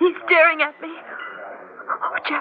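alarmed, fearful voice with swooping pitch. A woman tells jeff a man near the door is staring: frightened. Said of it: "I'm afraid".

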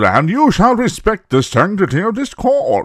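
put-on sudden odd British accent, very high and swooping. Retelling an actor's sudden line in a film: Ernie Hudson's weird British accent. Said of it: "took up some weird accent".

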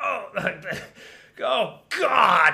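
high-pitched, rough, utterly scornful exclamation. Imitating Beavis reacting to a music video, with disdain. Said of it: "with such disdain".

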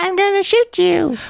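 put-on high-pitched old woman voice. Playing the Joker threatening Batman, in a Joker voice like an old lady. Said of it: "it's kind of like an old lady".

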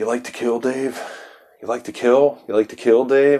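deadpan, dead-serious, flat delivery. Retelling a talk-show moment, imitating Hunter S. Thompson's deadpan. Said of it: "and you get that kind of deadpan thing".

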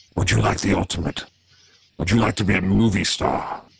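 mysterious otherworldly voice. Telling Bruce's story, the speaker voices the devil tempting him in an arcane voice. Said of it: "he hears this arcane voice".

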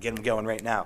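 usual speaking voice

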